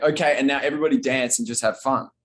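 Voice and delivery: ordinary talk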